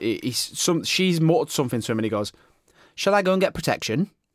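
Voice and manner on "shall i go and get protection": impression of a man, higher pitch. Retelling what a guy said at an event: imitating what he said. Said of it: "can I do an impression of what he said".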